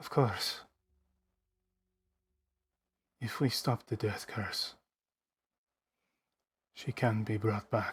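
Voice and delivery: soft, hushed, under-the-breath murmur. Voicing Victor, who turns to a player: speaking under his breath. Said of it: "he would just sort of speak under his breath".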